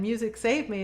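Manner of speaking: normal talking voice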